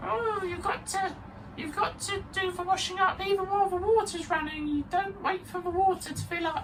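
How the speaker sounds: very high, put-on fairy-tale witch voice. Retelling advice someone gave about washing up, in a witch voice. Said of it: "done a witch voice for that".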